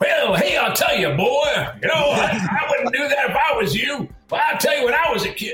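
big, blustery rooster voice. Describing a cartoon rooster giving advice: big blustery Foghorn Leghorn voice. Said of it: "a big blustery, like".

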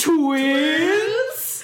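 high, loud shocked exclamation.

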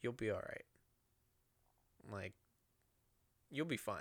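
gentle, very quiet, hushed, calm, soothing voice. Speaker retells what she said while he was angry and crying, imitating her calm voice. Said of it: "she's just kind of real calm".

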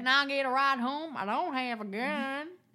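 put-on Texas accent. Reacting to a story from Texas, mimicking the kids asking for a ride, in a Texas accent. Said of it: "That was one of your best accents".

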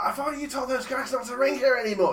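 very high, loud, shrieked scream. Retelling a girlfriend woken by a 3:30 a.m. phone call, imitating someone screaming. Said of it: "she just screams".

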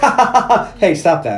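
put-on laughter.

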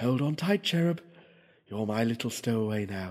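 quietly muttered under breath. As the curtain rises, she adds to the cherub under her breath. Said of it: "adding under her breath".

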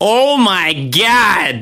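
high exclamation, last word drawn out. Repeating the other speaker's reaction to being asked to host: imitating Liz. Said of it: "That was Liz's response".

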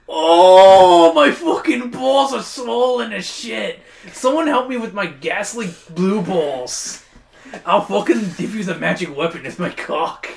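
loud groaning with the "oh" stretched out. Voicing the specter groaning again, louder than before: Nick Kroll voice. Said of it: "It groans again, louder than before".

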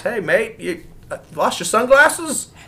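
put-on Australian accent. Retelling what a kid holding sunglasses said to the speaker, in an australian accent. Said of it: "Is that your Australian accent?".

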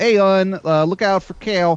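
slow, put-on Baltimore, Maryland accent. Describing how people in Maryland talk, demonstrating a Baltimore accent. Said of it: "a merlin accent is kind of like this".

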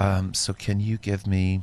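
calmest, even, steady phone voice. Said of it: "calmest voice".

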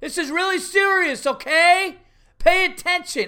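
very high, slow, drawn-out hollering. Retelling watching a guy at kids' baseball, imitating a guy yelling. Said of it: "I'm just watching this guy yelling".

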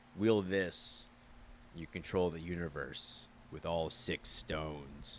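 whispered, hushed, breathy bad-supervillain voice. Showing off your impression to a co-speaker who calls it pretty bad: bad Thanos impression. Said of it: "That's my Thanos impression".

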